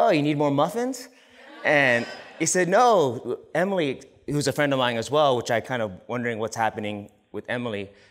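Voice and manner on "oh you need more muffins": mock, light, teasing, joking, pitched-up delivery. Recounting their answer when asked to come help, retelling a joking reply. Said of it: "I said jokingly".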